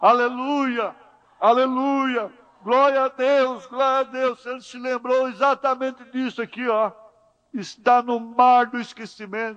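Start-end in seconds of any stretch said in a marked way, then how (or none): 0.0-4.5 mild, jubilant, worshipful, exultant praising cry. Retelling a man who jumps and praises God: imitating shouting praise. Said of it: "começou a gritar".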